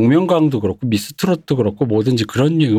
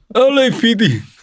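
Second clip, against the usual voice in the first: mock shout from the belly, much higher; 10 semitones higher than usual. Imitating people who shout LAPD, imitating a shout from the gut. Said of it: "저 밑에서부터 단전에서부터 나오는".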